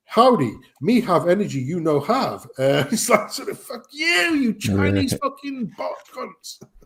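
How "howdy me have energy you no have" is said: put-on American accent in advert announcer style. Mocking a bot-made advert, speaking in a fake American advert accent. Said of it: "some American accent saying".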